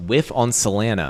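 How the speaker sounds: ordinary delivery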